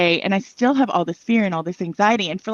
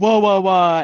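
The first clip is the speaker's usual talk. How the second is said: booming put-on archangel voice. Retelling a conversation between angels, voicing Michael in a booming archangel voice. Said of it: "in like the booming archangel voice".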